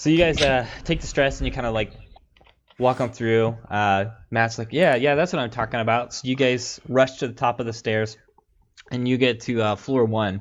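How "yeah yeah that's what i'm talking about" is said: ordinary delivery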